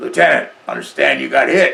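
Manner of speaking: loud, rough, gravelly sergeant's rasp. Retelling what a big Marine said to him as a lieutenant: imitating a gravelly voice. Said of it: "and gravelly voice".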